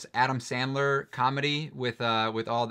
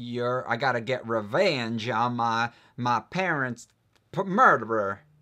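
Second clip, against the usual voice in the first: put-on American southern accent, own version. Recalling a line from an old short story they remember: southern accent. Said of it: "That was my southern accent there".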